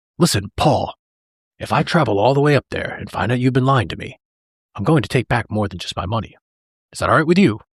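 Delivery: put-on plain, matter-of-fact, flat delivery. Quoting Daniel warning Paul while shaking his hand: matter-of-fact Daniel voice. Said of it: "he just says it so matter of fact".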